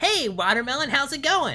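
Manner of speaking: high character voice. Showing his Banana character greeting Watermelon, in the Banana voice. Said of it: "Banana is a little bit higher than my normal voice".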